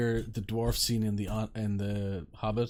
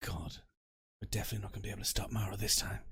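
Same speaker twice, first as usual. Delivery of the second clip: soft, hushed whisper; 7 dB quieter than usual. Speaking in character as Will to Alton, whispering. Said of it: "Will whisper to Alton".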